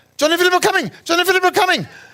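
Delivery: put-on Fijian accent. Retelling a woman announcing visitors to kids, in a loud fast Fijian accent. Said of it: "she's saying it in a Fijian accent and loud and fast".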